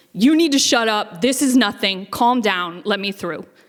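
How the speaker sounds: loud booming voice. Retelling a man's voice booming over everyone around a bag, loud booming voice. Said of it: "this very loud voice booms".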